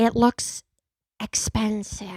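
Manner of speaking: breathy, whispered, soft, airy put-on voice. Showing the others an impression, doing a Jennifer Coolidge impression. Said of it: "that was my Jennifer Coolidge".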